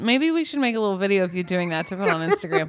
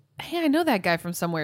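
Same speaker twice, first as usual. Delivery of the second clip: ordinary delivery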